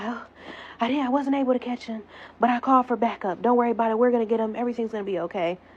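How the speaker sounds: imitated out-of-breath voice. Retelling what the police officer said on coming back: imitating someone out of breath. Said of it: "He all out of breath".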